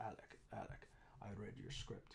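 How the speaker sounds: put-on German accent in a hushed near whisper. Tobias comes up to Alec during a location shoot and speaks in Tobias's German accent. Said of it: "because he's German, so he speaks with, with a German accent".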